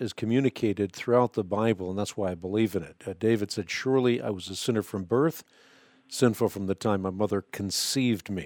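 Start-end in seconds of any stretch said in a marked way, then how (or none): none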